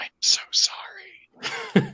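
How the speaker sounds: whispered, pitched high, hushed. Describing the kill in a game scene, whispering an apology. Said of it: "and I whisper".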